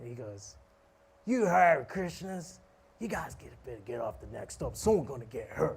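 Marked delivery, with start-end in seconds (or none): 1.2-5.8 put-on angry drunk man voice. Retelling how a homeless drunk man got angry at them: imitating an angry drunk man. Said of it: "Like this".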